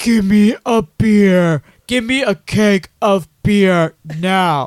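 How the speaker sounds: loud, angry, very slow and drawn-out. Retelling a movie scene at a liquor store: imitating a low, angry voice. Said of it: "his voice gets really low".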